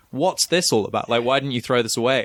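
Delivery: ordinary delivery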